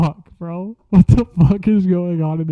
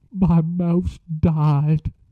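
normal talking voice

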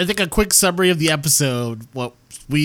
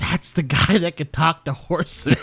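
hushed, whispered aside. Retelling a scene where a man whispers to his friend: imitating someone whispering. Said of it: "whispers to his friend".

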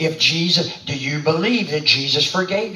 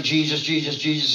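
ordinary talk, nothing marked

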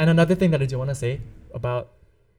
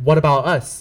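normal talking voice

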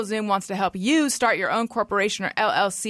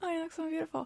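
put-on under-breath mutter, much quieter; 6 semitones higher, 13 dB quieter than usual. Speaker retells her mom's remark to her, mimicking mom's mutter. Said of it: "don't keep that one so under your breath".

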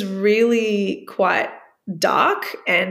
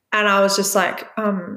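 normal talking voice

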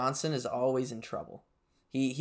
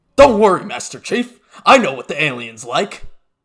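very loud, booming bark at full volume; 11 dB louder than usual. Halo player addressing Master Chief, in a Sergeant Johnson impression. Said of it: "That was Sergeant Johnson impression".

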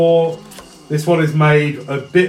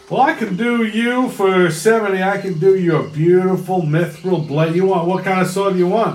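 put-on Texan drawl, vowels stretched long; 4 semitones higher than usual. Game master voices a character offering a sword to a player who rolled 70: Texan drawl. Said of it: "He's a Texan drawl".

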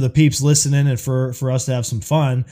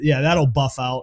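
ordinary talk

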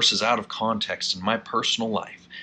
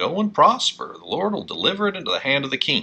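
plainly insincere, sarcastic, swooping tone; 4 semitones higher, 3 dB louder than usual. Retelling a prophet's answer to the king: imitating a sarcastic reply. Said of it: "sounds like kind of sarcastically".

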